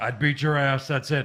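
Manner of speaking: tough, menacing wrestler-style delivery. Showing how a wrestler would cut the promo: imitating Stone Cold. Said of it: "Stone Cold just would be like".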